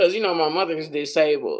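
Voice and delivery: ordinary talk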